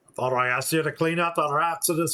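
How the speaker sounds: put-on Scottish-accented voice. Voicing the game character who sent them to clear the rats, in a Scottish accent. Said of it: "I always want to put a Scottish accent on this".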